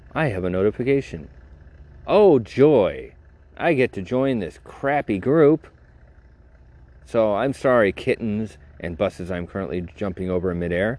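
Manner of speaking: plain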